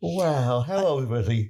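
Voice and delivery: yawning through the words. Reacting to a story about an interview, yawning while speaking. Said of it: "sorry, I was yawning".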